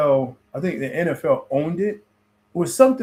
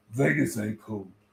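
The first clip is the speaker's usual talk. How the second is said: teasing, mocking echo of a line; 6 semitones lower, 7 dB quieter than usual. Mimicking how the other speaker just said the line: mocking imitation of the other speaker. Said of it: "That's how you said it".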